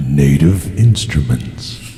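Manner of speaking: deep, weighty official proclamation in announcer voice. Naming a gadget's maker as an official shout-out, God voice. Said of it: "official shout out with the God voice there".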